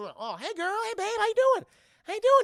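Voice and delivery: shrill, swooping, flirty holler, high and loud. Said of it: "and just doing".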